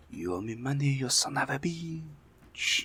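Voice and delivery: very heavy, soft, thick French accent. The speaker acts out how they imagine a character talking, in a thick, disgusting French accent. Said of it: "most disgusting French accent".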